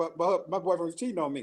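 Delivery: ordinary delivery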